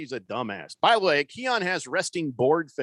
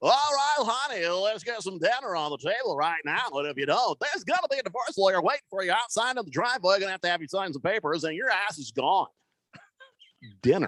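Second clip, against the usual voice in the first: put-on broadcaster announcer voice; 3 semitones higher than usual. Joking about a broadcaster talking the same way at home; mock broadcaster voice at home. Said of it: "Nobody goes home talking that way".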